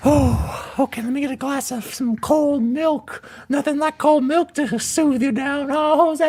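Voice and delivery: sinister villain clown character voice. Hosts doing a whole ASMR Joker episode, in the Joker voice. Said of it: "I don't think the Joker drinks milk".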